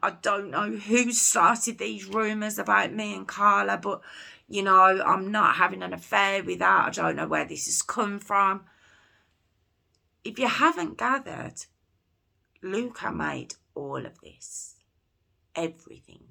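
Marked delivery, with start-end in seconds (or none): 0.0-8.7 fast, upset, near-tearful voice. Recounting another post found online, imitating Luka almost crying. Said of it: "practically crying".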